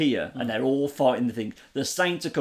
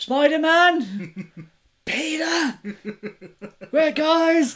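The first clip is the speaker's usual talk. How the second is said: desperate, very high-pitched, drawn-out panicked shout; 5 dB louder than usual. Recounting a scene where Miles Morales panics, retelling Miles Morales shouting.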